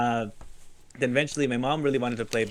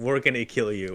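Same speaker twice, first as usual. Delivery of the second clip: plain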